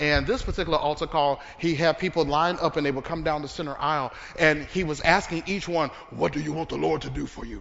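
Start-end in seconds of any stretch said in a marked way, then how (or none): 6.1-7.6 playful rough, creaky put-on voice. Retelling an altar call, imitating the man asking each person. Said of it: "I don't know why I talk in his voice".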